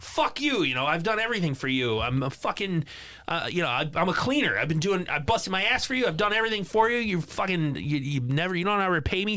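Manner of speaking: acted-out shout. Recapping a scene, the speaker voices Preston being dragged away: retelling a yell. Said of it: "Preston starts yelling like".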